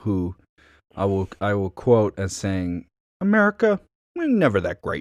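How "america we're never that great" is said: very high put-on accent, pitch swinging wildly. Quoting a governor as saying something: Cuomo impression. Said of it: "That's my Cuomo impression".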